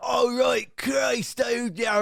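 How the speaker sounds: very high, slow put-on English accent, gentle Canadian accent. Showing how his partner imitates him when she walks in: Englishman with Canadian accent. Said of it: "trying to do her impression of a of an Englishman".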